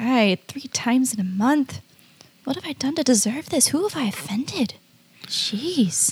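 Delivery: quiet muttering to oneself under the breath. A player's character, pointed toward a door by a crab, mutters under breath. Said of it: "I'm muttering very quietly under my breath".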